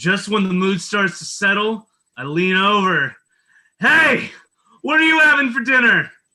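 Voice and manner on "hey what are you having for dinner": way too loud, booming voice. Retelling leaning over to a date at dinner: imitating his own loud voice. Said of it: "my voice is too loud".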